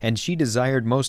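ordinary delivery, nothing marked

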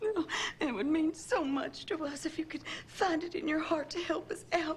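crying, tearful, high-pitched pleading voice. Asking someone who works for the government to help you out, crying while pleading. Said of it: "Don't cry, honey".

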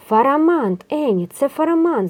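high, loud, thrilled and delighted yell. Spotting a dragon overhead, a character calls out to a companion, shouting excitedly. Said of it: "захоплено волав Тім".

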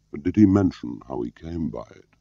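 plain

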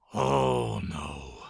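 very low, rasping voice. A narrator reads Mr. Gum's cry as the angry fairy hovers over him, rasped. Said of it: "he rasped".

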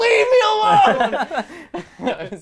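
very high, very loud, shrill furious yell, acted out. Retelling answering family who ask if all is okay: imitating own angry shout.

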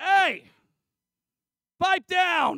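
shrill, very loud, high-pitched shout. Retelling the storm story, Jesus shouting at the storm: imitating Jesus yelling. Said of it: "Jesus yells at the storm".

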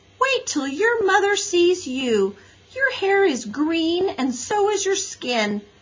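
exclaiming, very high-pitched. Mary Jane pushes through the crowd to look at Henry, exclaiming. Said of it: "she exclaimed".

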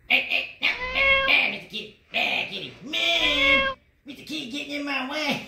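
very high, very loud cartoon yelling, "no" drawn out. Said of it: "Eric Cartman".

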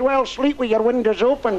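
put-on Scottish accent. Retelling a woman's reply to a request for a morning wake-up call: scottish accent. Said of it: "you get that sort of smell of the accent when she says".

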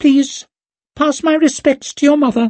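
very high-pitched, squeaky voice. Reading a story, Gorst speaks to Leo, Gorst's squeaky voice. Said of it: "Being dragged bodily from his bench by Bremerdan [name] felt similar. The man's strength defied belief. ... he squeaked".

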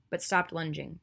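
ordinary delivery

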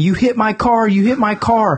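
acted high-pitched woman's screaming tirade. Retelling a viral clip of a crash: imitating a woman screaming. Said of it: "she's screaming at him".

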